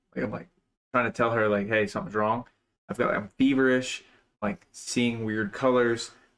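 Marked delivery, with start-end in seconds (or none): none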